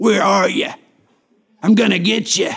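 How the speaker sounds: put-on angry, menacing gangster voice. A Bible teacher shows how God's call to Adam was not spoken, angry mobster voice. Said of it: "with the voice of an angry mobster banging on the door".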